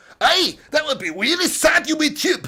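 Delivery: put-on Scottish accent on every word, pitched high. Arguing people should still be free to do accents online, in a scottish accent. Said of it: "every Scotsman got in here and just took massive offence to me saying like".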